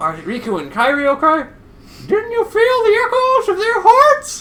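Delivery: swooping animated cartoon mouse voice. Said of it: "am I doing the Mickey Mouse voice".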